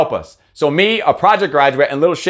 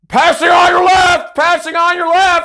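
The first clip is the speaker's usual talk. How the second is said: mock shrill, very high, drawn-out screaming yell; 3 dB louder than usual. Retelling how a passing cyclist warns them: imitating a cyclist screaming. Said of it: "They just love to scream it".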